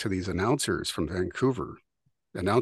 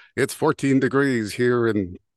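loud on-air AM radio announcer voice; 4 semitones higher, 6 dB louder than usual. Recalling hearing am radio in the barn as a kid, mimicking a radio announcer. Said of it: "pretending to be an announcer".

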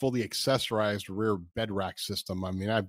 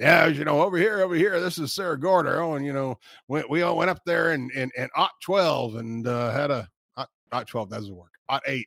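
put-on, gravelly old-timer voice; 4 semitones higher, 4 dB louder than usual. Joking about a desert trip, putting on a gravelly old man of the desert voice. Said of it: "You gotta get the gravelly voice".

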